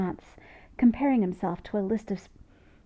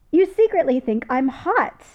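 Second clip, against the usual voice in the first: very loud, high, gleeful gloating; 5 semitones higher, 9 dB louder than usual. Narrator reads Jim's gloating line to Spock, gleeful. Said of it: "Jim says gleefully".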